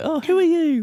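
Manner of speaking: mock innocent, very high-pitched, little put-on voice. Imitating Vic greeting a newcomer: innocent-sounding imitation of Vic. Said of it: "He sounds so innocent".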